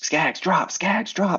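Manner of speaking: urgent high yell, rising in pitch. Showing a player what to call to a teammate: urgent screaming. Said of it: "I'm screaming".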